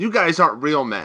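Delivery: normal talking voice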